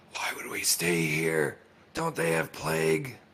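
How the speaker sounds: stage whisper. A player's character speaks aside to a companion, very loud whisper. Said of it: "in a very loud whisper".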